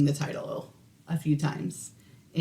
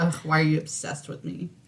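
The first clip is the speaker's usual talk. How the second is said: mock-exasperated, acting fed up. Recounting the reply given at work whenever asked to do something; mock-exasperated retort. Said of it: "I'm like".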